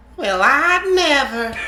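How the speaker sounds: put-on low, soft, rural old woman voice. Reading a story aloud, voicing an old woman's reply in a country old lady voice. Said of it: "I always go for a country old lady voice".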